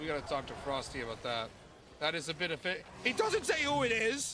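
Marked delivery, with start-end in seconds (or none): 3.0-4.3 voice cracking up very high. Streaming while sick, reacting to a game, voice cracking. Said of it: "the voice crack".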